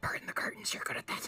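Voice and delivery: hushed whisper in a character voice. Game master voicing Ollie's answer to a player's apology, whispering. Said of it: "Ollie just whispers".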